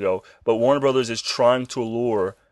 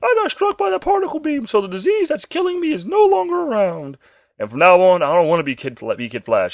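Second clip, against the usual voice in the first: put-on little boy voice, much higher pitch; 9 semitones higher than usual. Retelling a show's plot, voicing the young hero: Kid Flash little boy voice. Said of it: "giving him a little boy voice".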